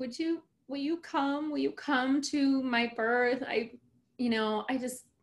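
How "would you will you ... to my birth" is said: mock high, tearful, crying plea. Retelling asking her to come to the birth: imitating own past crying.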